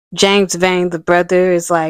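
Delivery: ordinary delivery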